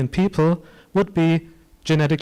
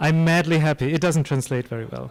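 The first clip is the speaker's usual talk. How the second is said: plain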